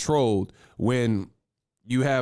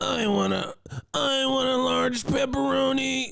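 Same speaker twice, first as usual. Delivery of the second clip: weird, squeaky, very high, creaky put-on voice; 14 semitones higher than usual. Recalling old prank calls to Pizza Hut, ordering in a weird prank-call voice. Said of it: "Like just just weird voices".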